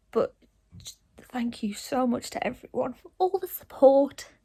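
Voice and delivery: teary, emotional, tearful, close to crying. Thanking everyone for all the support after coming home from hospital: tearful. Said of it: "My eyes are leaking".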